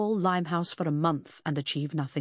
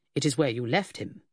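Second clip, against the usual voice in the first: ordinary delivery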